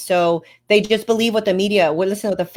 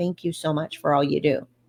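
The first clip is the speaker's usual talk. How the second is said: gentle, very soft, low soft-spoken voice; 4 semitones lower, 7 dB quieter than usual. Recounting a man who turned back and reached over, retelling a very soft voice. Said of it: "he just with a very soft voice".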